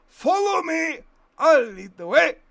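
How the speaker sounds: put-on very high, shrill, very loud, booming dwarf voice. Voicing Simon's line at the tunnel to their home: dwarf voice. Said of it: "Simon says in dwarf voice".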